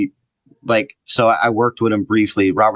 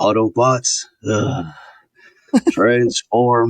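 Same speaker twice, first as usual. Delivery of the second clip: put-on worn-out, aged low rumble, halting with pauses. Showing how he sounds now that he is much older, imitating an old, rumbling voice with pauses. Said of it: "there's pauses and he's like".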